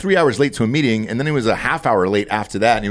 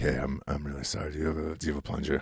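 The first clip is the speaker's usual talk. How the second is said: much deeper voice, dropped about an octave; 7 semitones lower, 15 dB quieter than usual. Recalling what they say afterwards to make a joke: voice dropped an octave. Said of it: "I'll at least drop an octave in my voice".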